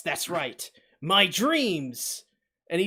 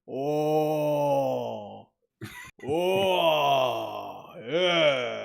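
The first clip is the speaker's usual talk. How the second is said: rough, low, creaky, drawn-out villain voice; 5 semitones lower than usual. Retelling how a villain sounds in a show, imitating a voice actor's villain line. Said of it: "his voice literally is like".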